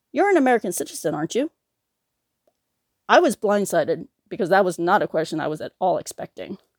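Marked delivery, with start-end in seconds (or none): 0.1-1.4 put-on, sincere-sounding, puzzled, confused tone, pitched up. Retelling a clerk's unexpected question: imitating a sincere, confused question. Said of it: "asked in a very sincere and somewhat confused tone".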